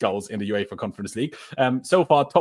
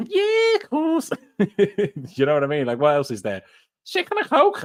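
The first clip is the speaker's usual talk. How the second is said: animated, pitched-up Liverpool Scouse accent; 8 semitones higher than usual. Asked on stream for a different English accent, trying a Scouse accent. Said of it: "Maybe a bit of Scouse".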